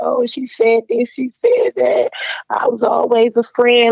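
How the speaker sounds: high-pitched crying, tearful and self-pitying. Retelling going to the manager crying: imitating own past crying. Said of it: "I went to him crying".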